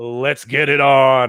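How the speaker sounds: deliberate, slow, stretched, drawn-out voice. Opening the podcast with a catchphrase, imitating Dozer. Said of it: "that was my Dozer impression".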